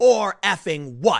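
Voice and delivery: loud, hollered, screamed retort. Retelling how a woman answered the police: imitating a woman screaming. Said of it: "she's screaming at the cops".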